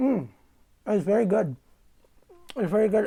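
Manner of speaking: high-pitched, chewing while speaking through a mouthful. Trying bread a player brought, the speaker talks on stream: talking with mouth full. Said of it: "sorry to speak with my mouth open".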